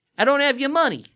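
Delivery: clumsy, bad put-on Australian accent, very high. Speakers trading accent jokes, doing a bad Australian accent. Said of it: "That's my that's my Australian".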